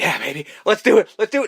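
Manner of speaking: frantic, high, rising, loud freaking out. Retelling a movie scene where Stu agrees to the plan: imitating Stu freaking out. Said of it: "Stu's just freaking out going".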